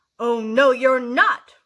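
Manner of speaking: very loud, booming, drawn-out troll roar. Reading a fairy tale aloud, the troll answers the goat: roaring troll voice. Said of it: "roared the Troll".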